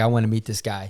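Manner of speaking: normal talking voice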